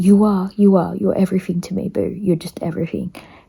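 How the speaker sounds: blubbering, bawling words through heavy sobs. Retelling what Peter said while bawling his eyes out: imitating Peter bawling. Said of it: "he started bawling his eyes out".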